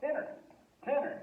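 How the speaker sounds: very high pitch, American accent on tener. Teaching Spanish verbs, showing how an American speaker would say the word: American accent. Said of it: "if we're speaking an American accent".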